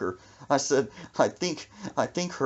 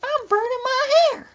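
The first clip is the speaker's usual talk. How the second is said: put-on very high, loud grandma voice; 7 dB louder than usual. Retelling what Brandon's grandma said when asked what she was doing, imitating her voice. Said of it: "She said in that voice".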